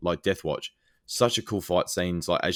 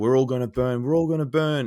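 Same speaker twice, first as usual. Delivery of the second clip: mock raving shout, high-pitched and loud; 6 semitones higher, 5 dB louder than usual. Retelling a captured fighter's last words: imitating someone yelling. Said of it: "he's just yelling out".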